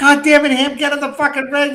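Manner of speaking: play-acted, high-pitched yelling. Retelling how Nick yelled at a man throwing up: imitating Nick yelling. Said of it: "Nick starts yelling at him".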